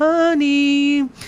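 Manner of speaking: high, slow, pleading voice. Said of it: "So it's like".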